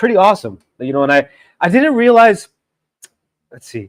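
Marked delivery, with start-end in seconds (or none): 0.0-2.5 getting emotional, choked-up, higher-pitched voice. Talking about seeing parents on a trip home, getting emotional. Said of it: "I'm even just getting emotional".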